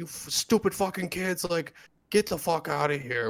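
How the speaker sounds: put-on shrill, very high angry yell in an old man voice. Retelling how an old guy yelled at the kids: imitating an old man yelling. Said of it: "he yelled at us".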